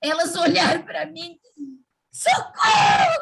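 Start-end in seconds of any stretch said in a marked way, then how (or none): 2.1-3.2 put-on girlish screaming, higher and louder. Retelling the girls opening the door on them: imitating girls screaming. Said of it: "Começaram a gritar".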